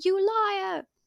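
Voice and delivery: high-pitched, accusing scream. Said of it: "And [name] screams".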